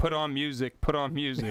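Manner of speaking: ordinary delivery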